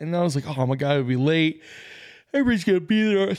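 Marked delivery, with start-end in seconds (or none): 2.3-3.3 words stretched by a yawn, pitched up. Telling about running late for a morning car meetup, yawning while talking. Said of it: "Sorry, I'm yawning".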